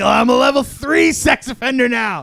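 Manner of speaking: mock anime villain voice, high, loud, boastful.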